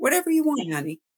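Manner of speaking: calm easygoing tone. A parent showing how they answer their kids in the morning, in a very calm voice. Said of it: "My voice is very calm".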